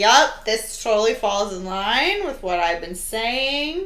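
heavily sarcastic, mock agreeable tone.

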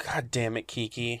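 seething, fuming, fed-up angry swearing. Retelling the others waiting for someone late: imitating angry people. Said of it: "They're fuming".

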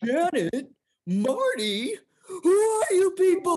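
very high, loud cartoon voice with swinging pitch. Riffing on SpongeBob with the other speaker, doing a Patrick Star voice. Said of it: "I couldn't do Patrick Starr all day".

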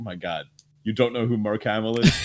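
ordinary talk, nothing marked

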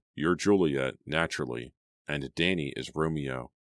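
plain reading voice

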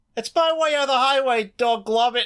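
put-on very high, girlish voice with British accent. Quoting a favorite line, trying to sound like a little British girl. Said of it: "trying to sound like a little British girl".

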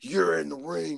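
high, slow, crazy monster voice. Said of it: "in his crazy monster voice".

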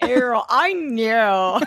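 put-on near-Australian accent. Doing the Audrey line in a Michelle voice, almost Australian. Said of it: "mine'll be my Michelle for sure".

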